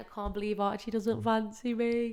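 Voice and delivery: acted, tearful crying voice with words sobbed out. Retelling driving home in the snow: imitating own past crying.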